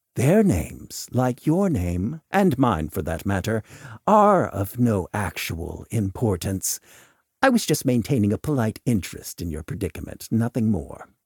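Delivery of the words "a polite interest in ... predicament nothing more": ordinary delivery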